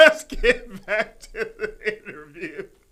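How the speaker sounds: loud, slow speech while laughing.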